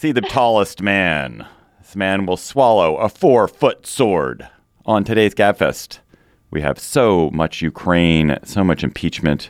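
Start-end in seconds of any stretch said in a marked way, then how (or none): 0.0-6.0 carnival barker's showman spiel voice. Opening the podcast after a Coney Island visit, in a carnival barker voice. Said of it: "I'm feeling very Carnival Barker".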